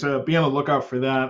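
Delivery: normal talking voice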